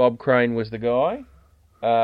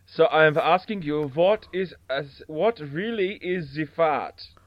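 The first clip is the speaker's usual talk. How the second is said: put-on, pitched-up German accent; 5 semitones higher than usual. Telling a joke to another speaker in a put-on German accent. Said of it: "that's where I drag my German accent from".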